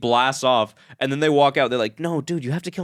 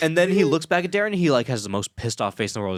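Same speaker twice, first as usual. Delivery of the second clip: usual speaking voice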